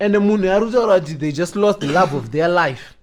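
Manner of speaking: usual speaking voice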